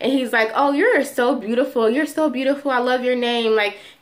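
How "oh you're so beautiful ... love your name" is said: acted flirtatious talk. Retelling how the worker doing the nails started flirting: imitating a flirting nail worker. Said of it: "he just started flirting with me".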